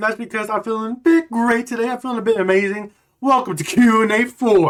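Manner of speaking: overexcited, hyper, loud and pitched very high. Opening a Q and A video for viewers: hyper and excited. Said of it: "Sorry if I'm a little bit too hyper".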